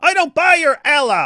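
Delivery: high, loud, blurted mocking jab.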